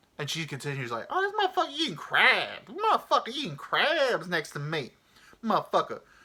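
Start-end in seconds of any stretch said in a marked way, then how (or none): 1.1-6.0 sing-song, animated, very high, swooping woman's voice. Retelling what the woman next to the crab eater said: imitating her voice. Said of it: "that's how she sounds".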